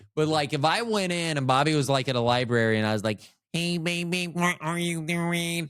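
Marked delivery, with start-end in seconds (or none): 3.6-5.7 flirty, seductive voice, pitched up. Acting out a pickup line at a library: sexy Stephen Hawking voice. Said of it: "that sexy, uh, Stephen Hawking voice".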